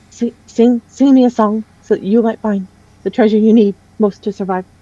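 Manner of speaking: tiny, small voice of a little creature. Narrating to listeners, voicing the figure who looks at them: little voice. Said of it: "in his little voice he goes".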